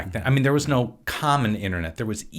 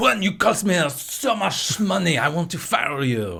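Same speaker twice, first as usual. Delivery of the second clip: untrained, clichéd French accent, slow; 6 semitones higher than usual. Showing the accent he uses for a French guy: stereotypical French accent. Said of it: "this is my stereotypical accent. If it's a French guy".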